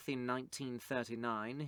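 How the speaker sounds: ordinary delivery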